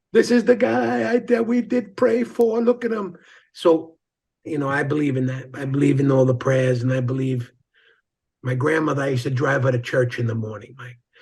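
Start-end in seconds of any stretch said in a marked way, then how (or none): 0.1-3.1 put-on Italian accent, pitched way up. Retelling what the bishop said on meeting him again: imitating an italian accent. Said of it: "they all had the Italian accent way back when".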